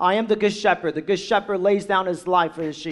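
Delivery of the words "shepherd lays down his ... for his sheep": normal talking voice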